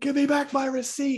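play-acted very high-pitched shrieking, screaming. Imitating the other speaker screaming into the phone: imitating someone screaming. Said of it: "You're screaming into the phone".

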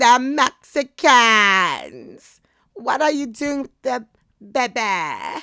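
loud, belted, high-pitched voice swooping up. Explaining Texas history, switching into Moira's voice from Schitt's Creek. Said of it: "Moina's voice from Schitt's Creek".

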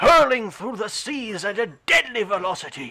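loud, high, lofty documentary narrator voice. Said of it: "borderline David Attenborough".

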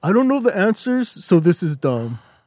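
dismissive, griping, friendly complaining voice. Mimicking the other speaker's complaint about the list: imitating the other speaker complaining. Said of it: "That's a pretty good impression".

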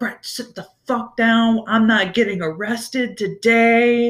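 put-on mild scolding yell. Recounting yelling at Brett, acting out the yell. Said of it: "I'm yelling at him".

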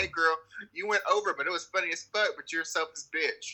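normal talking voice

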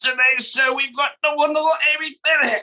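very high, giddy, overexcited announcer-style host voice. Teasing the other speaker about how he opens the show, imitating Nigel overexcited. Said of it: "there's my impersonation".

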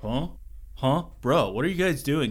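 put-on relaxed California accent. Retelling a game where a creature confronts the group, Mothman with a California accent. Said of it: "he has a California accent for some reason".

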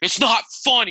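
put-on very high, miffed, angry kid voice. Retelling a kid's reaction in class: imitating an angry kid. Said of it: "the kid got pissed, like mad".

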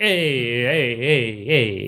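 put-on Italian accent. Speaker mocks people doing Italian hand-gesture bits, in a stereotypical Italian accent. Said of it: "are the Italians ever offended by this".

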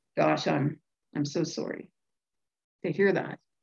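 put-on voice, suddenly deflated, dropping low. Retelling a job call after the employer learns of home-only work: imitating a dropped, deflated voice. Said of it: "you hear the voice drop like two octaves and the whole tone change".

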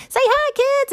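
high, loud, cheery calling voice.

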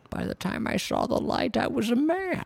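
very high, badly done put-on character voice. Quoting a line in a Bane voice: terrible Bane impression. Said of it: "That's a terrible Bane impression".

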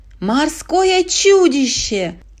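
wailing, high-pitched scream. Narrating a story, a character points at a sea monster: screaming. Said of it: "завопил Лука".

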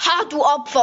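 really loud, high, jeering, taunting shout. Retelling what someone blurted out really loudly, retelling a really loud jeer. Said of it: "hat so so richtig laut".

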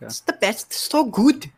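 put-on, attempted Irish accent. Doing an accent in a guessing game for the others to identify, irish accent. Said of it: "It's Irish, guys".

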